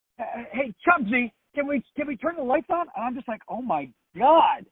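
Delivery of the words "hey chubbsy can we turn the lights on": put-on man's yell, much higher pitched. Telling a story, the speaker acts out what a man yelled, retelling a yell. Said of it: "And he yells out".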